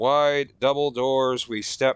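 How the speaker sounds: plain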